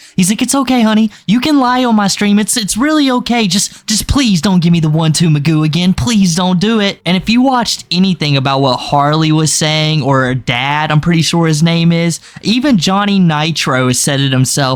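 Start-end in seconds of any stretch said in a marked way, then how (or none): 0.4-7.0 put-on scared pleading voice, pitched higher. Retelling someone storming in and screaming: imitating scared Dubs. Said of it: "Dubs was so scared".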